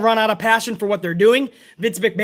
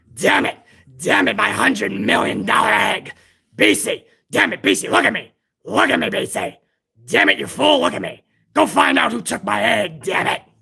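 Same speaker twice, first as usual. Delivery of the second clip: raspy, grinding, rough, creaky put-on character voice. Doing the impression again for the same fan: Vince McMahon impression. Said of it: "That's my Vince McMahon impression".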